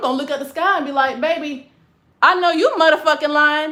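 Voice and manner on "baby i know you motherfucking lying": loud, blunt, unfiltered delivery. Retelling what they would say back as a child: imitating own blunt retort. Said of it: "and I'll say it just like that".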